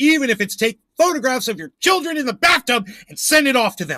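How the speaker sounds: angry voice. Ranting right after pausing to catch a breath: angry. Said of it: "I'm so angry right now".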